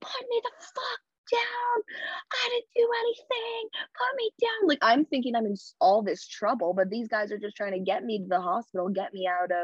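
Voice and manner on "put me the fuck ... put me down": mock shrill, very high screaming. Telling of being carried out of a club by security guards, reenacting own screaming. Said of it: "I'm sitting there screaming".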